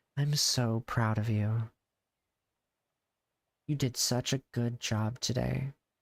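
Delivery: voice dropped low into deepened register. Showing how he imagines a woman the viewer sounds like would talk, dropped low voice. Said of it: "I drop my voice and I'm just like".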